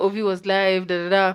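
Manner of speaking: normal talking voice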